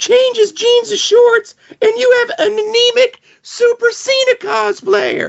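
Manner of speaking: mocking put-on voice. Reading aloud a fan's post sent by a friend: put-on voice reading a fan's post. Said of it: "I'm gonna read it in this voice".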